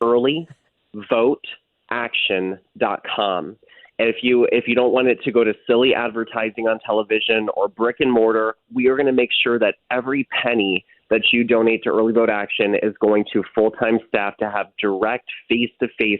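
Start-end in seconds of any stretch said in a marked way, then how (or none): 0.0-3.5 carefully spaced out, slow, halting, broken into pieces. Asking listeners to contribute, the speaker repeats the web address, said slower. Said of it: "Let me say that slower".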